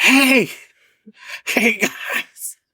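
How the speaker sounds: very high stage whisper, pushed hard like yelling. Showing what used to be called a whisper yell: whisper yell. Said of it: "whisper yells".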